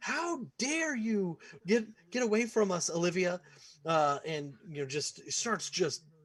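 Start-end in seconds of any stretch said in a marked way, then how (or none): 0.0-3.4 scolding nurse voice, much higher pitch. Voicing a nurse who scolds a little girl for getting away, scolding nurse voice. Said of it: "the scolding voice of this nurse".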